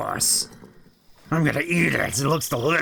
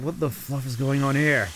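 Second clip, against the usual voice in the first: plain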